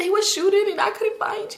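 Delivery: mock tearful wail, very high crying voice. Speaker retells what they told their cousin back then, imitating their own crying. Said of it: "Let me talk regular".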